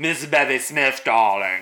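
grand, theatrical put-on voice. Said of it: "now she's".

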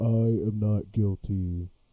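very slow, drawn-out delivery, each word stretched out. Saying a requested line, imitating Tyler. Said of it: "can you say".

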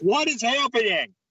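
yelling loudly. Speaker shouts a question as someone arrives, shouting. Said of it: "Why are you shouting?".

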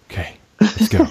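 high, jittery, nervous self-pumping energy. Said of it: "I was like".

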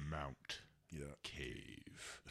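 weighty, very slow, drawn-out, hushed and grand. Showing a friend how the name should be said, said slowly. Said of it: "you got to say it slow".

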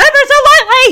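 shrill, very loud, high-pitched shouting. Retelling a father teaching his daughter to drive: imitating someone shouting. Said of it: "He's shouting right in her face".

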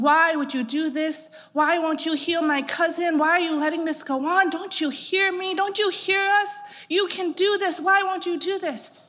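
play-acted high, furious, angry shouting. A speaker recounts a man yelling at God over his cousin: retelling an angry yell. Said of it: "He was yelling".

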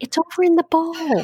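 small, high, put-on little girl's voice. Retelling waiting for a voice to say where the leash is: put-on little girl's voice. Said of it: "like a little girl's voice to go".

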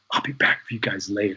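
hushed, half-whispered stage whisper. Retelling how the mother spoke in the theater: imitating a half-whisper. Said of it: "she whispers".

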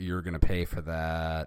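ordinary delivery

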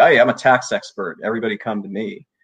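ordinary talk

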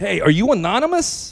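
loud, high call-out for all to hear. The speaker retells police calling out on their arrival, retelling a loud call. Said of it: "Very loudly".

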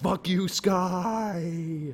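mock yelling, sky drawn out. Mocking a movie character yelling up at the sky: imitating Wolverine yelling. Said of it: "just yelling at the sky".

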